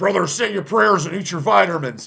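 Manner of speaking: pro wrestling announcer style. Quoting a famous wrestling promo while naming the best ones: Hulk Hogan promo impression. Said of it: "I think the Hogan promo".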